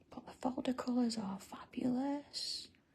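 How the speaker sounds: soft, hushed whisper. Sharing the new folder colours as a secret: whispering. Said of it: "I'm only whispering".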